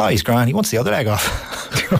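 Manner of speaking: completely unbothered, casual, offhand tone. Retelling a brother's reply about their father: imitating Shane, completely unbothered. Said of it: "completely unbothered".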